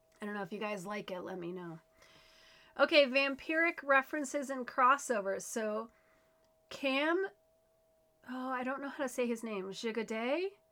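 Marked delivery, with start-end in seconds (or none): 0.2-1.8 soft, hoarse, husky voice. Speaker tells listeners how their voice sounds today; husky voice. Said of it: "I'm sounding very husky".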